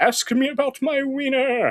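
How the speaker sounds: character voice, very high and drawn out. Quoting a movie line the way it sounds in his head: Jonah Hill character voice. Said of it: "I say it in the voice of that guy from".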